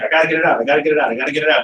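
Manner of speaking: excited, rushed, rattled-off repetition. Explaining own rush to share ideas, imitating own rushed excited talk. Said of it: "I talk really fast because I'm like".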